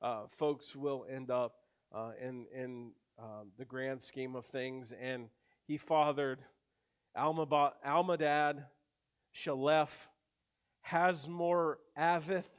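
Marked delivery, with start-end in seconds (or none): 7.2-12.5 deliberate, very slow, careful, syllable-by-syllable pronunciation. Reading out a list of hard names: very slow, careful pronunciation. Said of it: "I have to say that real slow".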